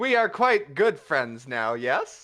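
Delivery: flamboyant swashbuckler voice. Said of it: "aren't you flamboyant, good sir?".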